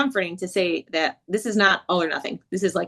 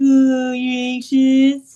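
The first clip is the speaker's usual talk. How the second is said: put-on babyish talk, high and loud; 6 semitones higher, 6 dB louder than usual. Retelling how a client's mother answered her anxiety, in a baby voice. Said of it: "her mother would put on a baby voice".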